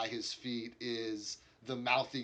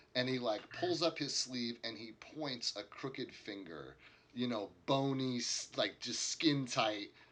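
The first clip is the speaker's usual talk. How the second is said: ordinary talk, nothing marked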